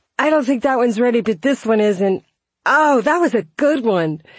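high, loud, giddy, excited squeal.

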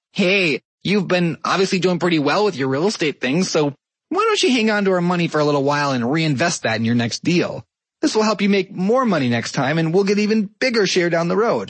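high, whiny voice right through the nose. Explaining tax rules, the speaker voices the IRS addressing the listener: whiny, nasal IRS voice. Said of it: "in this whiny, nasally voice".

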